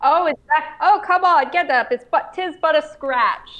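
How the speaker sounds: high-pitched, mocking, taunting jeer. Voicing a character taunting a wounded foe about his missing leg: taunting. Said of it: "Blubble is going to taunt him".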